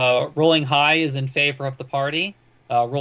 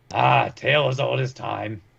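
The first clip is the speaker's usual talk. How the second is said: put-on gruff, rough-edged, creaky voice. Imagining the answer to an offer to help hide a body, in a gruff voice. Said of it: "they'll just hear in a gruff voice".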